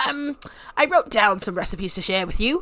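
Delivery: grumpy yet sweet character voice. Voicing a teaching Sim reading from her notes: voicing Miss Crumplebottom. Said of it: "I don't know why I'm making her voice like that".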